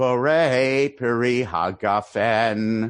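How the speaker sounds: Californian borei peri hagafen, wrong syllables stressed. Showing how California non-Orthodox synagogues say the blessing: Californian pronunciation, misplaced stress. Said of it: "I'll give the full Californian pronunciation. ... emphasizing the wrong syllable".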